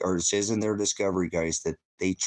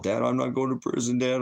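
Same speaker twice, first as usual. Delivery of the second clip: put-on scared half-crying, much higher; 5 semitones higher than usual. A father retells his son's phone call, imitating scared half-crying. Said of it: "He was kind of half crying".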